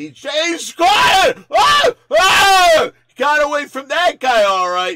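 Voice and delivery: very high-pitched, loud screaming shout.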